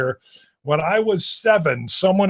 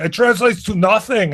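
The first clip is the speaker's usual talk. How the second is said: put-on heavy German accent; 4 semitones higher than usual. Retelling her mom's answer to her question, in an Arnold Schwarzenegger accent. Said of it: "That was a very good Arnold Schwarzenegger accent".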